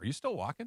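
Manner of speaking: mock suspicious, doubtful tone. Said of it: "it was in the tone".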